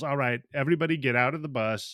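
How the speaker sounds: usual speaking voice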